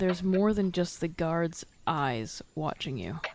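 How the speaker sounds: quiet, hushed murmur under the breath. Leaning in to speak in character: said quietly. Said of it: "gonna say quietly".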